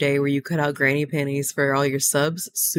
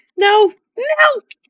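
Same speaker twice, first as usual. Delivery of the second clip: very high-pitched, loud shout; 8 dB louder than usual. Telling off a cat that is yelling: yelling. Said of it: "I'm sorry I yelled".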